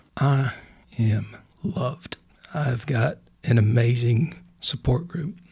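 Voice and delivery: emotional, choked up, words catching. Interviewee asked what they learned about themselves, answering choked up. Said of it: "Sorry if I'm getting choked up".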